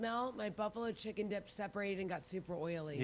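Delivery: ordinary delivery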